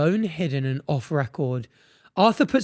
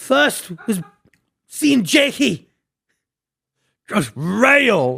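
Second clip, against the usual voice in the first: put-on angry voice, higher and louder; 6 semitones higher, 4 dB louder than usual. Reading out a suspect's direct quote while doing impressions: angry Ginge impression. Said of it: "to read and do impressions".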